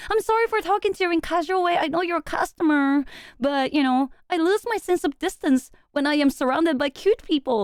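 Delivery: high, coy, flirty, suggestive sweet-talking tone. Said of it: "She talks to me in that way".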